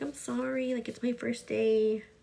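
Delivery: slow, tearful, crying through the words. Retelling apologizing to a daycare worker on the first day: retelling own words while crying. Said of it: "And I was, like, crying".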